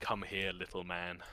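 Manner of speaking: deep, low, heavy, hushed voice. Voicing a large exiled figure beckoning a player closer: deep voice. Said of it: "the deepness of the voice".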